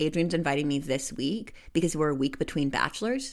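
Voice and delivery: ordinary talk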